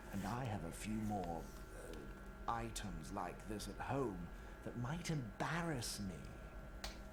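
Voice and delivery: theatrical delivery. Acting out a Harry Potter scene line: dramatic reading. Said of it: "my dramatic reading of Harry Potter".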